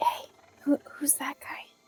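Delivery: hushed, quiet, barely voiced whisper. Asking a companion by the campfire about a newcomer: whispering. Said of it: "kinda whisper at him and be like".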